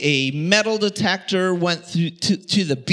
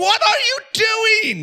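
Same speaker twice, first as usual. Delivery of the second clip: shrieking scream, pitched very high. Retelling digging a hole in the backyard when mom comes out: imitating mom screaming. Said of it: "she's screaming".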